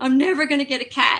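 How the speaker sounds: crying, upset, high-pitched, loud tearful voice. Recounting the daughter calling in tears after a lost race, imitating a crying child. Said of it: "So she calls me crying".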